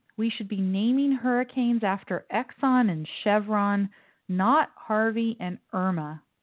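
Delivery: ordinary delivery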